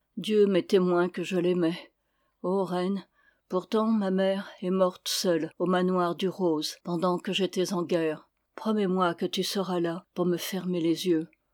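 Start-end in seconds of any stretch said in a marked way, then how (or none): none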